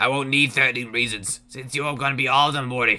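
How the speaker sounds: put-on Boston accent, cartoon character voice. Telling Morty he will be all thirteen reasons: Rick voice with Boston accent. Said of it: "That would imply Rick has watched".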